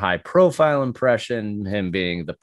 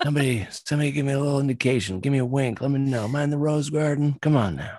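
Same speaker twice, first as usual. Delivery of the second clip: put-on elderly politician voice, higher pitch; 5 semitones higher than usual. Doing an impression on request from the other speaker: Joe Biden impression. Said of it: "give us a little Biden".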